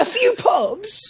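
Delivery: very high put-on British accent. Joking about football players hitting up a few pubs: put-on british accent. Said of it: "That's my British accent".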